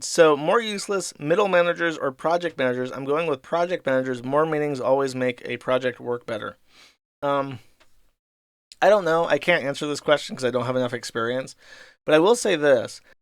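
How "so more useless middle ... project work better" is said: ordinary talk, nothing marked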